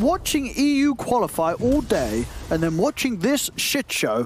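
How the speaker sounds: put-on high, slow, very British accent. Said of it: "I'll say it in a very British accent".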